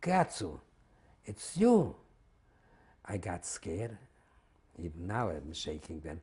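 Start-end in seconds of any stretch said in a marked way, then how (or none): 0.0-2.0 delighted hollering, very high and very loud. Telling how a man on the train platform recognized the speaker, retelling his hollering. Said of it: "he was hollering".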